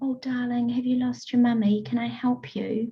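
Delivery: gentle, hushed, comforting tone, soft and slightly high. Showing the tone of voice to use with her, gentle quiet tone. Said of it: "You would use gentle tone. You would use a quiet tone".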